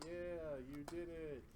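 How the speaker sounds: sarcastic, dry, mock-praising tone.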